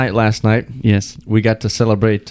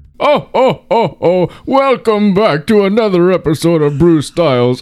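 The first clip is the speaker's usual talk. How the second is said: put-on character voice, much higher; 9 semitones higher than usual. A podcast host opens a December episode: Arabic Santa Claus voice. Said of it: "You sound like an Arabic Santa Claus".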